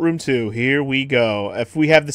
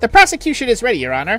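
high-pitched, whining, smug voice; 7 semitones higher than usual. Voicing the prosecutor character the speaker calls a douchebag, high-pitched whiny voice. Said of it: "I gotta do that high-pitched whiny voice for this douchebag".

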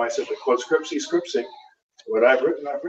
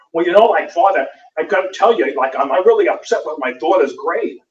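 put-on Brooklyn mother accent with audible gum chewing; 4 semitones higher, 4 dB louder than usual. Retelling a mother complaining to him about her daughter's grade, gum-chomping Brooklyn accent. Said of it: "chomping on gum with the Brooklyn accent".

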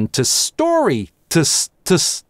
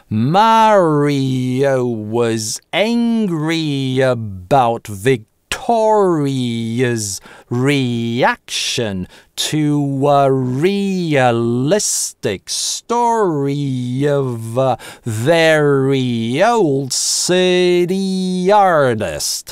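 whole sentence very slowly spoken, "city" drawn out. Demonstrating an English practice sentence, speaks the whole sentence slowly. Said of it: "И вся фраза целиком медленно".

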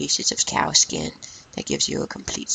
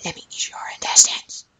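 put-on demon voice, louder. A gamer, playing and talking to his viewers, uses his demon voice. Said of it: "That was my demon voice".

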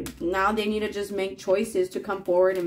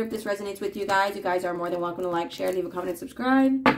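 rushed delivery, much faster pace. Closing out a video and asking viewers to subscribe, super fast sign-off. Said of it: "I always try to say the exit super fast".

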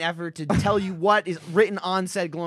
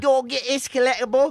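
high-pitched, put-on English accent, played as character; 7 semitones higher, 4 dB louder than usual. Telling where to get a collectible, in a Fable-style English accent. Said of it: "let me do Fable accents".

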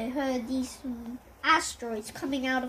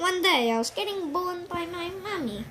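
put-on high, babyish little voice; 5 semitones higher than usual. Role-playing, telling the listener their origin story, in a baby voice. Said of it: "You really sound like a baby".

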